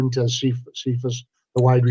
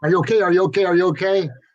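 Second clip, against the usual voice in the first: put-on higher, worried, repeated pleading tone. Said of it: "And then Dan says".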